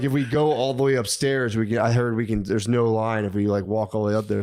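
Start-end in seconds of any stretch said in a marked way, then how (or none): none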